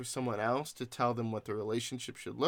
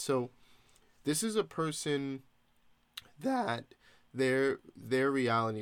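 slow, halting voice that cracks and breaks mid-phrase. Talking in a conversation, the speaker's voice cracking mid-sentence. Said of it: "sorry, my voice cracked".

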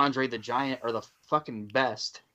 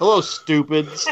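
loud, taunting wrestling-heel voice; 4 semitones higher, 8 dB louder than usual. Imagining a show opening as it comes on, doing a Bobby Heenan heel impression. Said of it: "and just heels on him".

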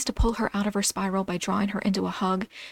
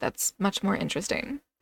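ordinary delivery

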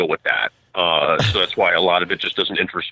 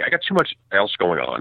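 dismissive, snarky, sarcastic throwaway delivery. Explaining a lack of interest in winter sports: snarky. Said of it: "I'm gonna say this in a really, like, snarky way".

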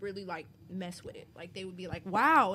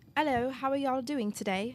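tentative, put-on London British accent; 3 semitones higher than usual. Asked by the group to put on a London accent, the speaker greets everyone in one. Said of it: "put on a London accent real quick".

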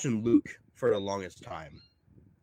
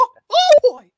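squeaked out, high and loud; 11 dB louder than usual. Doing a voice for the others, Mickey Mouse voice. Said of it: "That was a good Mickey".

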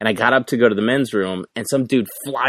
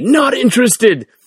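mock scream, much higher, louder; 14 semitones higher, 7 dB louder than usual. Retelling how a man followed him to the men's room door; retelling a man's scream. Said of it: "he just screams at me".

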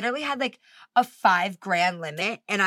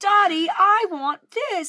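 put-on very high, very slow, stretched-out bratty spoiled-girl voice; 10 semitones higher, 4 dB louder than usual. Quoting a spoiled rich girl from Willy Wonka: imitating a Willy Wonka character, stupid accent. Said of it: "she's like".

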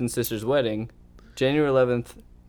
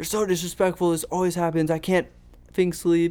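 high, angry scolding yell, put-on woman's voice; 5 semitones higher than usual. Retelling how a woman at her door kept yelling, imitating her yelling angrily. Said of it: "And she's like still yelling".

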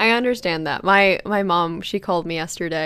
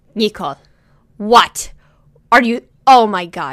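put-on annoyed voice, louder; 3 semitones higher, 8 dB louder than usual. Retelling a mother's reaction to a peanut allergy: imitating an annoyed mom. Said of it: "And she got so annoyed".

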